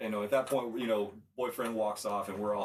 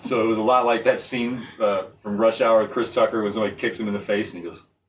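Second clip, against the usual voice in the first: ordinary delivery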